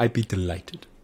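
bad put-on Welsh accent, not quite right. Imitating the showrunner answering a request: imitating Russell T Davies. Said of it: "He'd be like".

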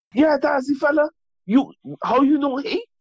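very high-pitched, storytelling-style chattering voice. Imitating an uncle who retells a story about Patrick: imitating an uncle telling a story. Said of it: "uncle, you told me this story".

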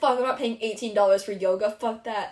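ordinary talk

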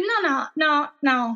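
plain

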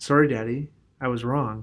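soft, gentle, soft-spoken voice. A father imagining one of his kids apologizing to him: soft, gentle apology. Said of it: "just softly and gently".

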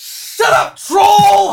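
loud, high-pitched yelling. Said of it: "turns around and says".

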